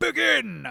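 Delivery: very loud, high-pitched, booming, deafening shout. Voicing a king starting a contest before a crowd: booming shout. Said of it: "his booming voice is magically amplified until it's deafening, and he shouts".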